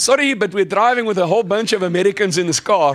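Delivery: put-on laid-on-thick South African accent. Talking to a woman who comes over to the car, thick south african accent. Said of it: "put on my nice, thick South African accent".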